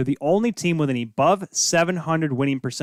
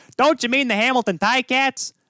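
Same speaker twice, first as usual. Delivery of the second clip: Chicago accent with raised pitch; 10 semitones higher, 3 dB louder than usual. Voicing the listeners' imagined question in a Bill Swerski Chicago accent. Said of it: "took on the Bill Schwarsky Chicago accent there".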